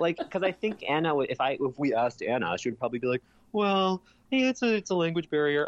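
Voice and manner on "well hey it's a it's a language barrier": put-on high-pitched Orange County voice. Imitating what Anna would say about the couple: Emily Simpson voice. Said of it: "Emily Simpson O C voice".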